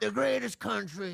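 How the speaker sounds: rough, high-pitched voice pushed from the back of the throat. Copying a demonstrated Donald Trump rally voice: Donald Trump impression attempt. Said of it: "That's it".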